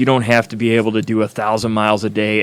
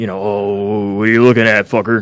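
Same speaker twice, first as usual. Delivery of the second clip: put-on menacing hard-ass tough-guy voice, slower. A biker explains what being a biker isn't, mimicking a hard-ass dude. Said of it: "some hard-ass fucking dude that fucking gives everybody".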